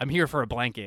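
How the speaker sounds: gravelly, macho tough-guy voice. Retelling a movie scene, imitating Django: gravelly tough-guy Django voice. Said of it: "he says it with that usual, like, gravelly, tough guy macho way".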